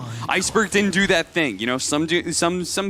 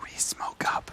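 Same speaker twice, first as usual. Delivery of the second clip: hushed whisper, barely audible. Adding atmosphere to a joke about a gank, whispering. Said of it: "I'm whispering to".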